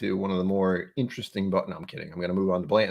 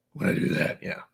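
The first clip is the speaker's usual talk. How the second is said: grumbly put-on superhero voice, quieter. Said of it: "That's the grumbly voice".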